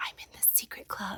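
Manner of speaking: thrilled, excited little hushed whisper. Retelling how the daughter says she joined the club: imitating a child whispering. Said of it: "she says it in a whisper".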